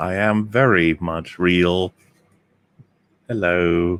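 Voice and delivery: put-on computer voice. Repeating a line on request: HAL 9000 impression. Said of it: "is that your hal nine thousand impression".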